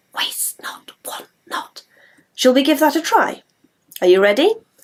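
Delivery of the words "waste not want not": soft, hushed whisper. Leading a group, showing how to whisper a phrase back: whispered. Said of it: "can you whisper it back to me like this?".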